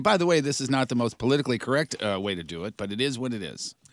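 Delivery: normal talking voice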